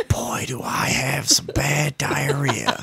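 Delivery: hushed whisper. Retelling what another speaker said quietly about diarrhea: imitating someone saying it quietly. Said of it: "you just said it to me real quiet".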